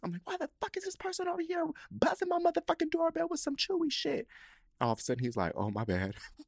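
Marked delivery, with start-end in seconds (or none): 0.2-4.3 play-acted very high, losing-it screaming rant. Recounting a stranger buzzing the doorbell with a delivery, retelling own screaming. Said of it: "I'm just screaming".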